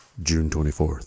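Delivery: deep, very low audiobook narrator voice. Telling someone about an audiobook, imitate its narrator in Jay Snyder's real low voice. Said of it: "he's got that real low voice".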